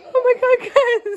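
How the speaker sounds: speech broken by laughter. Reacting to another speaker saying she is crying: laughing while talking. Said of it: "that's how I get when I'm laughing".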